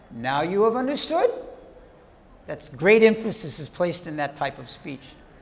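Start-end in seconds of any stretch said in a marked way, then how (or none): 0.2-1.3 voice rising in pitch on "understood". Quoting Mahaprabhu asking Murari a question, with a rise on understood. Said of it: "there's a question mark at the end with the voice going up".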